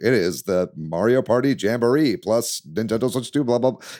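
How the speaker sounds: play-acted dry, flat, droning corporate announcer voice. Mocking past Nintendo Direct announcers: imitating a dry corporate announcer. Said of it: "a lot of the directs have been very dry".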